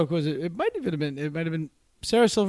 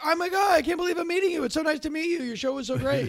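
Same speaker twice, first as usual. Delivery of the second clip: very high, star-struck, gushing fan tone; 10 semitones higher than usual. Retelling how online fighters act when meeting in person: imitating a gushing fan. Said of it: "then they meet you and they're like".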